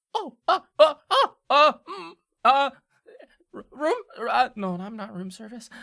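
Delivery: tiny, high, hesitant and halting little voice. Voicing a gnome at the door after a knock: little voice. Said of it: "a little voice go".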